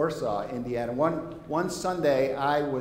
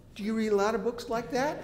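sweet, little, high-pitched lady's voice; 8 semitones higher than usual. Retelling what the lady sitting next to the speaker said, imitating a sweet little lady. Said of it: "this sweet little voice from the sweet little lady".

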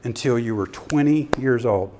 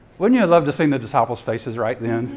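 ordinary delivery

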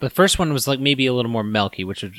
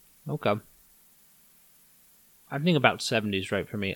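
speaking with mouth full of food, slower; 4 dB quieter than usual. Speaking in a two-person conversation, talking with mouth full. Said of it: "I have food in my mouth".

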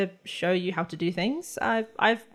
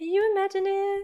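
gentle, very kind, very high-pitched; 10 semitones higher than usual. Retelling how Damish turned to Faraday and asked, imitating Damish asking kindly. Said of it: "just very kindly goes".

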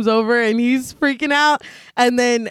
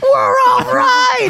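acted-out scream, much higher and louder; 12 semitones higher, 5 dB louder than usual. Recounting a scene where a character screams into another's face, imitating someone screaming. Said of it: "He's screaming it into his face".

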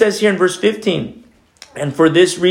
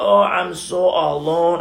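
pretend sobbing. Acting out a pretend scene of oneself while the phone keeps ringing: mock crying. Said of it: "And I'm crying".

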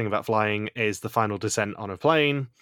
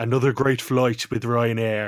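put-on Irish accent. Imitating an airline announcement after landing: irish accent. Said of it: "I apologise for that Irish accent".

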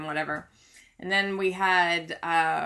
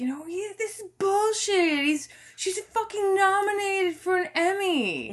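mock, very high, protective screaming rant; 13 semitones higher than usual. Retelling Jane screaming at the check-in guy: imitating Jane screaming. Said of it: "screaming at the check-in guy".

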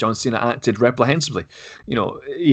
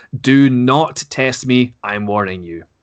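fake through-gritted-teeth, very slow. Retelling John Cena's warning to Damian Sandow, John Cena through gritted teeth. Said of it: "says through gritted teeth".

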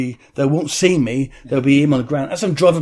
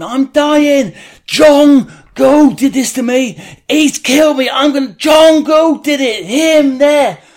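very high, drawn-out screaming; 11 semitones higher, 7 dB louder than usual. Retelling a wounded man's cries after an attack, retelling someone screaming. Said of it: "And he's screaming".

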